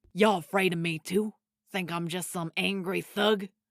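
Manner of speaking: loud, growled, slangy delivery. Reading a story aloud, voicing Red as he speaks to you: growling as Red. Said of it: "[name] asked, / Growled [name]".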